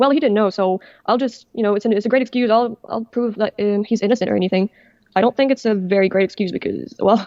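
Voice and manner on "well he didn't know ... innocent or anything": usual speaking voice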